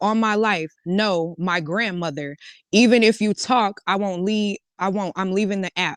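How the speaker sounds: normal talking voice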